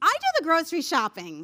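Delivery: loud, eager, excited, enthusiastic. Demonstrating how a person on the phone might say the same sentence, enthusiastic. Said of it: "you sound really enthusiastic".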